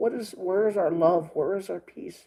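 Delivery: speaking through tears. Speaker addressing his viewers as guys, crying while making his point. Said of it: "I'm crying like a little sissy".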